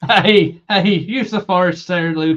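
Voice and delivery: put-on Irish accent. Taking a turn at use the Force, Luke: put-on Irish accent. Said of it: "Go on".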